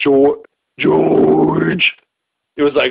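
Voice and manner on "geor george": put-on computer voice. Imitating a Kindle saying a name: 2001 movie computer voice. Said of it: "in a voice like the computer on that".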